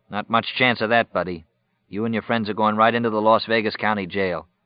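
ordinary delivery

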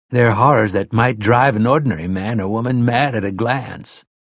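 plain reading voice

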